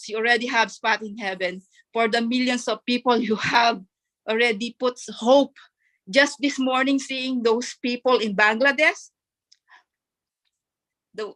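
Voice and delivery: tearful voice, talking through tears. Speaking to Mister As after seeing people in Bangladesh this morning, crying. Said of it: "I'm crying, sorry".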